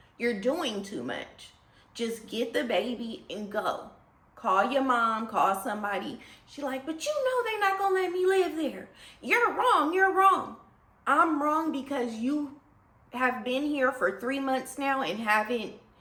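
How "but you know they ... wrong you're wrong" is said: high, screaming, protesting tone. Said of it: "the girl was screaming".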